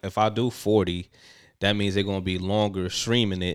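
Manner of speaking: ordinary talk, nothing marked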